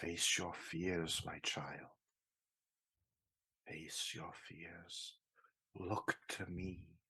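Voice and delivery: very soft, hushed whisper in a woman's voice. Narrating a scene, voice a disembodied speaker in the air, feminine whispering. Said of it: "a feminine voice whispering in the air".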